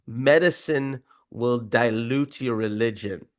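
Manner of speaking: put-on South African accent. Quoting a South African surgeon's advice to him, in a South African accent. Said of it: "I'll do it in his accent".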